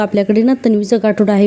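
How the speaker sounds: plain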